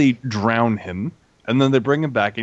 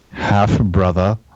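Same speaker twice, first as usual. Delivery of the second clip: put-on scheming voice, lower; 4 semitones lower, 4 dB louder than usual. Retelling a scene, doing a Littlefinger impression. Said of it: "That's a good impression".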